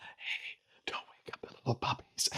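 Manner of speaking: quiet whispering. Talking quietly while puppies sleep nearby: whispering. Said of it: "I feel like I'm whispering because they're sleeping".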